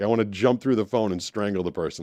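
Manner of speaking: ordinary talk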